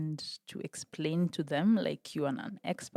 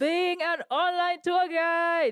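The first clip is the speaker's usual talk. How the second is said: fake, very high-pitched put-on excitement; 13 semitones higher, 7 dB louder than usual. Told they sound unexcited, redoing the line in a fake excited voice. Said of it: "your fake excited voice".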